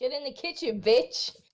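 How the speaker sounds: fed-up, exasperated, frustrated outburst. Saying a line a chat viewer requested: mock frustrated. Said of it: "Less, uh, frustrated and more just generally angry".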